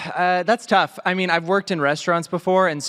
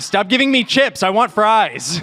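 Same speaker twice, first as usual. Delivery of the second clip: pretend angry tone, higher; 4 semitones higher, 3 dB louder than usual. Acting out an American visiting the UK, getting angry: mock angry American tourist. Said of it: "an American person visiting the U K, getting angry".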